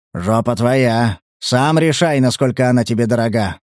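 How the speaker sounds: ordinary delivery, nothing marked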